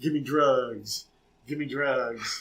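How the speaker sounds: low, slow, drawn-out voice. Recalling a TV character pretending to be an addict: imitating Barbarino as fake drug addict. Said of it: "he was pretending to be, like, a drug addict".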